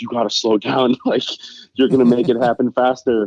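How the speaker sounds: hurried, mild, urgent half-shouted yell. Retelling the passengers yelling at the speeding driver, imitating someone screaming. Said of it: "they were screaming".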